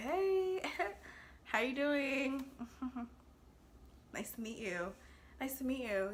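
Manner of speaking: tipsy, flirtatious, chatty voice. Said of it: "I was very, very flirty".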